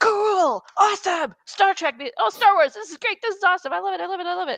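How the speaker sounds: put-on, very high, eager, excited gushing. Imitating friends reacting to Star Wars: imitating excited friends. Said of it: "they'd all get very excited about it".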